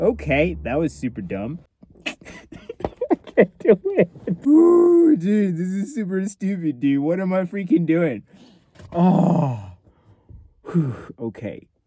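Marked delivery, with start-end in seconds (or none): 0.0-8.2 talking through laughter, higher. Sitting alone in the car after an outro, laughing while talking. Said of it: "Why am I even laughing just all by myself".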